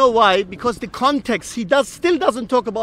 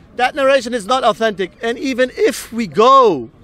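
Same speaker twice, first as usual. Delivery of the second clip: raised voice. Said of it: "I'm very sorry if I raise my voice".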